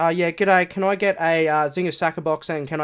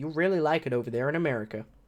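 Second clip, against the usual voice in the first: put-on American accent; 7 dB quieter than usual. Recommending a trip to the Grand Canyon, speaking in a put-on American accent. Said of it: "That's my American accent".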